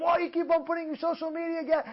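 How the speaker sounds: put-on screaming. Acting out a wife screaming at her husband, retelling a wife's screaming. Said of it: "his wife is screaming at him".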